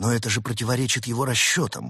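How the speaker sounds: usual speaking voice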